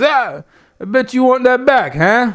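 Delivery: taunting mob-guy tone. Retelling what Tony D'Angelo told another man, in a Tony D'Angelo mobster voice. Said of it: "More more mobster".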